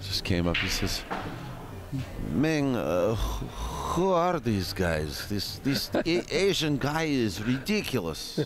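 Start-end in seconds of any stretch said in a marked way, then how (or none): 2.3-8.4 ridiculous put-on Russian accent, higher, slower. Telling the others about a russian stranger who came up to him: ridiculous russian accent. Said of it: "That's a good ridiculous accent".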